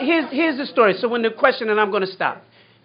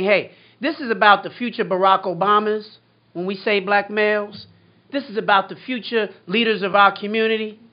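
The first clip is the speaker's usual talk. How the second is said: usual speaking voice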